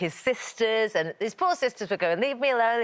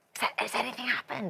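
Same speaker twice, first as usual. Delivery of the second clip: conspiratorial, confiding, concerned tone; 3 semitones higher, 6 dB quieter than usual. Retelling asking a crying toddler adult questions: imitating a conspiratorial tone.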